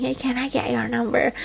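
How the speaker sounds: soft, hushed half-whisper under the breath. Retelling a man asking for a number during a workshop: imitating someone half-whispering. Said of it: "he was whispering".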